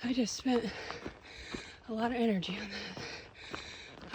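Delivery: slow, winded, out-of-breath huffing and puffing. Hiking a trail after a climb, speaking out of breath. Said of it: "I am huffing and puffing".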